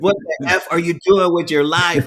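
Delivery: put-on, very high, in-your-face screamed rebuke. Retelling what a probation officer screamed at them: imitating a yelling probation officer. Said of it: "probation officer that was screaming at you and cussing at you".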